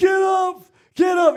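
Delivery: drawn-out, aggressive shout, very loud and very high. Retelling how he told Justin the same thing about ten times, imitating an aggressive voice. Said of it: "with this aggressive voice".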